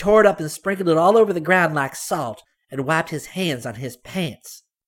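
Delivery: very loud, fast, high, rattled-off outburst. A child speaks up about a man in front of a blind man, loud and fast.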